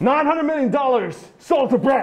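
very excited. Showing someone how to call the sale, getting real excited. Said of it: "You got to get real excited".

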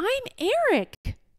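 shrill cry, pitched very high. A young man answers the king, who asks who he is; crying out. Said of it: "cried Eric".

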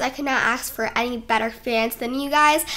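usual speaking voice

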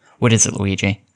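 ordinary delivery

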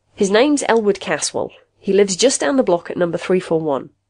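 ordinary delivery

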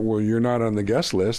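ordinary delivery

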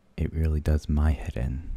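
normal talking voice

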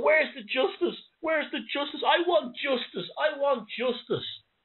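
acted blubbering, very high-pitched sobbing wail. Retelling a man's reaction after being told he wasn't good enough, imitating someone sobbing. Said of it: "he's like sobbing".

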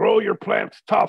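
thick put-on European accent. Quoting an older best friend in his thick European accent. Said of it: "He had a very thick European accent".

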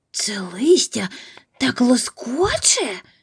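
hushed, under-the-breath, whispered little exclamation. Lying in the bear's den, scratching the whole time: whispered. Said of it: "прошепотів Чарлі".

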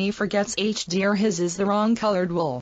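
usual speaking voice

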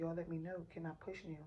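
ordinary delivery

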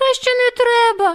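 very high-pitched, startled, frightened voice. A hare stops a little house spirit from saying magic words, frightened. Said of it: "злякано промовив Вухань".

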